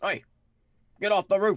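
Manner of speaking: acted out very high, loud shout. Shouting back at a man who yelled at him, shouted imitation of a man. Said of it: "I will shout back at him in his voice".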